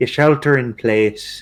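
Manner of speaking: put-on fake Irish accent. Adding a put-on irish accent to casual conversation. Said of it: "why the accent?".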